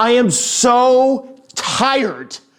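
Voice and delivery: mock very loud, high-pitched, at-wits'-end yell. Retelling a father who finally lost his mind in the car: very loud voice. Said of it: "say in a very loud voice".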